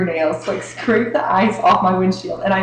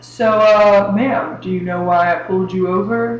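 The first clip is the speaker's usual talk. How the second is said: mock rude police officer voice. Retelling being pulled over, imitating a jerk cop. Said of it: "is like a complete jerk".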